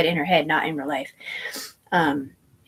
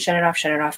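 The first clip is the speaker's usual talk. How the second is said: ordinary delivery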